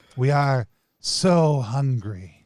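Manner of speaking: hissing, squealing put-on chorus voice. Voicing beings who ask for an offering, in a hissing, squealing chorus voice. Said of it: "sounds like a hissing, squealing tone".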